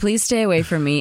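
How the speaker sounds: plain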